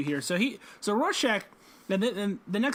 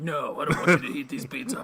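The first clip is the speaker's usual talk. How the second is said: put-on gravelly, lowered growling voice; 4 semitones lower than usual.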